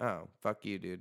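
ordinary talk, nothing marked

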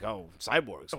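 acted cartoon character voice. Retelling a bit from the Dragon Ball abridged show: Piccolo voice. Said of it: "Piccolo's like".

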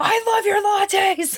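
very high, slow, put-on furious yelling. Describing a man yelling at a guy who brought him a latte, retelling a mock-angry yell. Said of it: "still yelling at him because he's trying to be angry".

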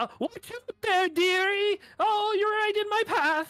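very high, very loud woman's shout. A narrator voices a woman calling out from behind, woman yelling out. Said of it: "You hear a woman's voice as she yells out".

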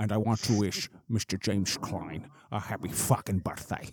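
Scottish screen-legend impression. Among friends getting shots ready, doing a Sean Connery impression. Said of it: "That's the best I got".

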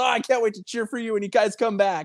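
acted excited gush. Speaker quoting a man's reply to being offered stickers and swag, retelling excited words. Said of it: "And he was all excited".

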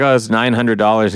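usual speaking voice

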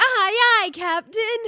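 eager yell, pitched very high. Answering a call in the SpongeBob bit: yelling "Aye aye Captain". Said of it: "I was so ready to yell".

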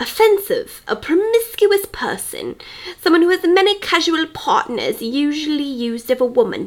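put-on posh British accent. Reading a dictionary definition aloud, posh British accent. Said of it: "posh with that little accent".

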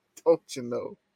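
put-on Minnesota accent. Answering a remark about forgetting the accent: Minnesota accent. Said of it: "forgetting to adjust for the Minnesota accent".

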